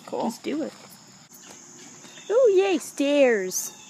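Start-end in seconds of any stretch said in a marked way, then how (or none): 2.3-3.7 loud, dripping sarcasm with false excitement. Heading up stairs to the manor house with a companion, sarcastic. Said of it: "The sarcasm in my voice".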